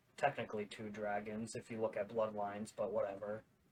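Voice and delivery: low, muttered half-whisper under the breath. Adding an aside to the group, half-whispering under breath. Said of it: "I'm gonna whisper under my breath".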